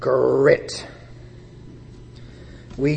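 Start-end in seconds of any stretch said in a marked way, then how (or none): 0.0-0.9 "grit" growled out low and rough. Explaining the word grit, growling out Grit. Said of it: "You kind of growl it out".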